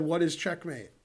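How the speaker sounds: ordinary delivery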